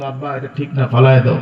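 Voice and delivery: ordinary talk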